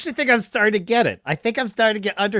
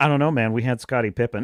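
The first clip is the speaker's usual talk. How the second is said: cool, calm, laid-back, unbothered delivery; 9 semitones lower than usual. Imitating a friend who calmly answers an angry arguer: calmly imitating Jay. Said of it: "who just calmly, he'll just sit there and be like".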